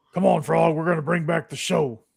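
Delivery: raspy, rasping voice with a Cajun accent. Retrying the Muppet dog line after correction: Rolf the dog voice with Cajun accent. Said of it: "I'm still Cajun, though".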